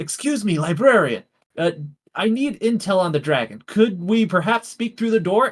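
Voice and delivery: stage whisper, loud. A player's character speaks through a door to a librarian, whisper-shouting. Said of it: "like I whisper shout through the door".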